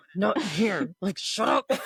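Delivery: speech through gritted teeth. Acting out arguing with someone inside a store: imitating talking through gritted teeth. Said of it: "fighting through your gritted teeth".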